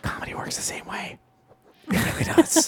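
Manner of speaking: secretive, hushed whisper. Speaker talking to the listening audience, whispering. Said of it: "I don't know why I'm whispering".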